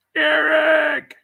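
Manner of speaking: very high shout, name stretched long. Showing the other speaker how to call out a name: shouting a name. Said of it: "So let me do it for you".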